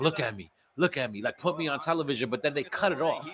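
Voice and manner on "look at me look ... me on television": mild yell, screaming manner held down small. Retelling how a man screamed at the camera, imitating his screaming. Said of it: "he was screaming at the camera like".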